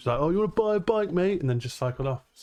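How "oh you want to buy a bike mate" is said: cheeky, taunting delivery at very high pitch. Retelling what a bike thief called out while riding off: imitating a thief calling out. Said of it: "he yelled at me. Well, not yelled".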